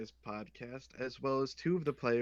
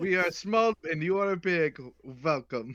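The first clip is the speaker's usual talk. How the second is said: loud, high fake German accent; 5 semitones higher, 8 dB louder than usual. Doing a mock show intro with another host, put-on german accent. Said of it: "Really working on that Russian accent".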